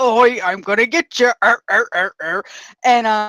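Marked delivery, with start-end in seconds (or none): 0.0-2.4 put-on dwarf character voice. Retelling playing a male dwarf character: imitating own deeper dwarf voice. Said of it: "I talked at a deeper voice".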